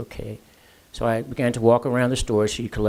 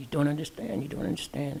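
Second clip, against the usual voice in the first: acted-out crying, desperate, high, tearful pleading; 5 semitones higher, 7 dB quieter than usual. Retelling an upset older lady in a store: imitating a crying woman. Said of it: "And she's crying and digging through her purse".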